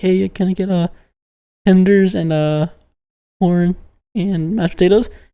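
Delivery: low mumbling, words running into each other. Imitating an old man ordering at the deli, in low, quiet mumbling. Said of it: "Kind of talks like this, like really low, like really quietly, and mumbles".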